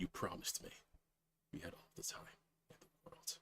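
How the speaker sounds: barely voiced whisper, under the breath. Narrating the one-shot, voice her as she stares at the necklace, under her breath. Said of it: "under her breath saying".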